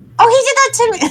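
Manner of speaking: very high, loud, excited character voice.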